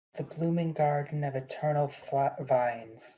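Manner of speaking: usual speaking voice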